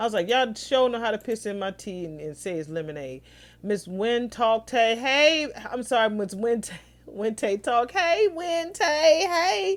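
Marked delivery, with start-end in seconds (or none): none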